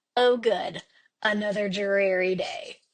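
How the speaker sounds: slow, dry, utterly deadpan, acted. Retelling what a passenger said from the back seat, imitating her deadpan. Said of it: "And just deadpan".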